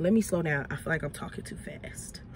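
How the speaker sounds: soft, unvoiced, self-aware whispered aside.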